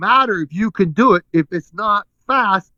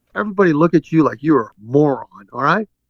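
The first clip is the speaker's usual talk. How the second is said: plain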